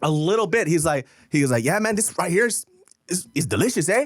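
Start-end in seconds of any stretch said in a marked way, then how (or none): 1.6-4.1 put-on slight Spanish accent, pitched up. Retelling a celebrity's video line: imitating Mario Lopez's slight accent in English. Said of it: "a slight accent when he speaks English".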